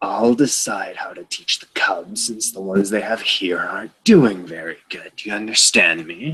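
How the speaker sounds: menacing, intimidating growled delivery. Narrating a scene, the speaker voices an intimidating character, growling. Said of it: "he just growls out".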